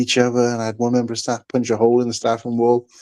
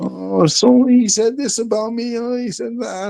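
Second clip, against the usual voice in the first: very high, weepy, drawn-out crying voice; 11 semitones higher than usual. Retelling how people get upset about the job: imitating someone crying. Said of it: "Fucking crying like".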